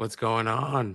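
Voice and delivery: cracking, breaking voice. A podcast co-host greets everyone as the episode opens, voice cracking. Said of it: "I don't know why my voice just broke".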